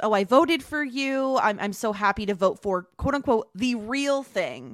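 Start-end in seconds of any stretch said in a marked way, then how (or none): none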